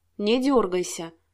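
ordinary delivery

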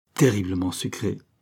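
ordinary delivery

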